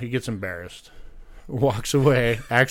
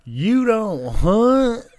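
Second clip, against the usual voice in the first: high hillbilly voice; 10 semitones higher, 6 dB louder than usual. Telling a story, the speaker quotes a man behind him: hillbilly redneck voice. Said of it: "I hear this hillbilly redneck say".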